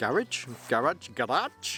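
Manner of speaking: "garage" in German accent, repeated, with questioning tone. Showing a bag's zip, repeating a word in a german accent. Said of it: "Maybe I was trying to say that with a German accent".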